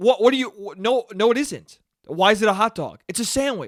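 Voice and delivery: put-on worked-up, heated, angry indignant tone. Retelling an argument about hot dogs, a speaker acts out the other guy's angry rant. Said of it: "He was getting fucking that angry".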